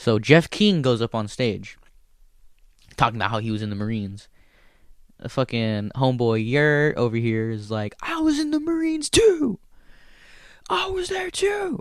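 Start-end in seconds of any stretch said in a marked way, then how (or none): 8.0-11.8 very high, shouted yell. Retelling a heckler interrupting a comedian on stage, imitating a heckler yelling. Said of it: "So this guy's yelling".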